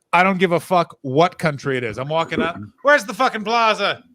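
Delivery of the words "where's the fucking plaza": sudden put-on Irish accent, pitched high. Speaker acting out asking cops for directions, in an Irish accent. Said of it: "Why'd you go Irish there?".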